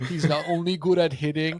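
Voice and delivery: put-on odd, weird babyish baby-talk voice. Speaker mocking what Yankees fans have been saying; weird baby voice. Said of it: "I don't know why I did a weird baby voice right there".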